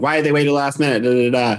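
fast, angry rant. Recalling ranting to mom in the car afterwards, retelling a mad rant. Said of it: "I was just like so mad".

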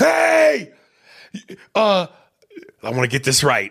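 frightened, panicked, high and swooping voice. Describing a film scene where Cuba raises his voice: imitating panicked Jack. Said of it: "Jack gets panicked and goes".

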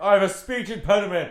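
high-pitched, loud, comic shouting character voice.

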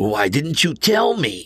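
high, insistent, pressing demanding tone. The narrator, marveling at a kind of magic never seen before: demanding. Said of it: "I demanded".

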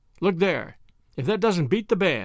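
ordinary talk

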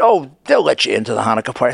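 ordinary delivery

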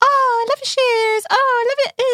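very high-pitched, insincere, put-on fake gushing. Imitating the insincere compliments people give: put-on high-pitched voice. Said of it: "You don't have to do it in a high-pitched voice".

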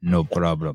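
put-on Russian accent. Hearing a written reply in his head, in Ivan Drago's Russian accent. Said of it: "I hear it in a Russian accent".

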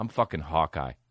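very deep, very low mumble, barely out loud. Retelling a celebrity driving away and saying something quietly: imitating Jeremy Renner muttering quietly. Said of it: "he doesn't say it loud enough".

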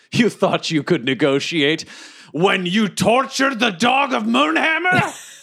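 heated, angry taunt, climbing as it goes. A player's character confronts a foe mid-battle, yelling at him. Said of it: "And then I yell to him".

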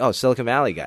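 usual speaking voice

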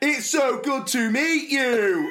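bad fake American accent, slow and high. Retelling how a man greeted the girls, in a bad fake American accent. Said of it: "trying to do like an American accent".

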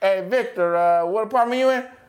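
put-on Mexican accent. Retelling checking an empty apartment, calling out to someone: Mexican accent. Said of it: "I got a Mexican accent".

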